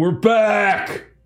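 calling out loudly. Speaker retells a scene, quoting a man calling it out: retelling a loud call-out. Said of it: "He just kind of calls it out really loud".

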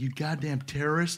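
hushed, soft mutter under the breath. Retelling what a dad rocking his baby in a passing car said, retelling a quiet insult, not yelled. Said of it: "he didn't yell it because he didn't want to wake up his baby".

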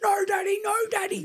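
put-on shrill, very high little-kid screaming. Parent imitating his two-and-a-half-year-old screaming at him, imitating a screaming toddler. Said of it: "he just screams at me".

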